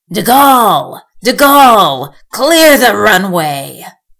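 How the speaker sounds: thundering, booming, very loud voice. Narrator reads her shouted line as she takes to the sky, booming voice. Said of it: "she boomed".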